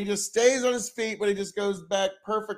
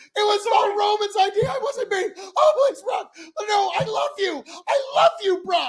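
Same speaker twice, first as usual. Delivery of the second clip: put-on groveling, pleading tone, higher and louder; 13 semitones higher, 5 dB louder than usual. Imitating Paul Heyman begging Brock Lesnar: imitating Paul Heyman begging. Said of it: "Paul's groveling and begging and pleading with Brock".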